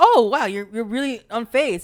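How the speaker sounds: usual speaking voice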